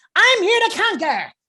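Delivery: very high, very loud, crunchy alien voice. A voice actor demonstrating his version of Cupid, in a crunchy Invader Zim voice. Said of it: "have that kind of crunchy".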